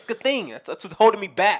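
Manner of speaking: loud shouting. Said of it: "Stop yelling at me".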